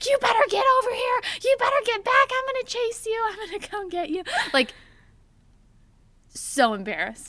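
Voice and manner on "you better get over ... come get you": very high, very loud top-of-the-lungs shriek. Retelling screaming from the backyard at the dog to come back, retelling a scream. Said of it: "screaming at the top of my lungs".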